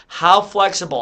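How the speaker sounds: ordinary delivery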